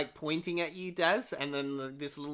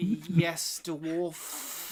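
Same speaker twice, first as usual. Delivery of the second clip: disgusted tone, especially on the last word. Voicing a character who answers a dwarf: disgust on the last word. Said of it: "a bit of, like, disgust at the end of his".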